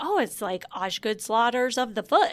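ordinary delivery

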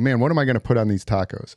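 normal talking voice

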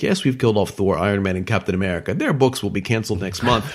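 ordinary delivery

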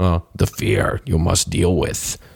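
put-on clumsy, badly done wise old alien sage voice. Explaining fear of losses to stock traders, in a terrible Yoda voice. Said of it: "That's a terrible Yoda voice".

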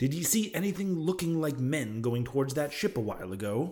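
ordinary delivery

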